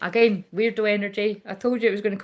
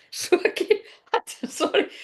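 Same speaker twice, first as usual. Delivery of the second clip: high voice breaking into laughter. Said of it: "sorry for laughing".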